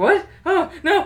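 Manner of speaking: high, loud panicked yelp. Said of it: "And the Gruffalo's like".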